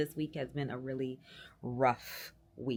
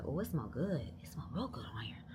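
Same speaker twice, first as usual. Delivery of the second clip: mimicked mutter under the breath; 5 dB quieter than usual. Speaker retelling what a lady on the elevator said, muttering under her breath. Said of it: "she said under her breath".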